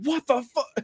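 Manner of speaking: mock very high, livid, furious outburst. Retelling own reaction to a movie twist in a theater: imitating own angry outburst. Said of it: "I got so pissed off at that".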